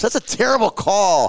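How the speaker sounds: very high, shrill, loud screaming. Retelling yelling at the refs during a hockey game: imitating screaming at refs. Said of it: "screaming at the refs".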